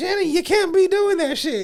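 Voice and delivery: very high-pitched, loud voice. Retelling warnings to Shannon Sharpe: Mo'Nique impression.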